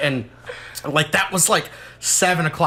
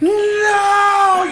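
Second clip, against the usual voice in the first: very high, loud, terrified crying scream. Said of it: "I was like".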